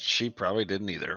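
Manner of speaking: low mutter under the breath. Speaking aside after denying hearing anything, muttered under breath. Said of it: "I'll say under my breath".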